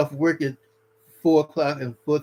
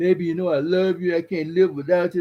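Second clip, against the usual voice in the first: mock crying, begging, tearful pleading voice; 3 semitones higher than usual. Imitating a husband begging his wife: imitating someone crying and begging. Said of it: "he up there crying, begging".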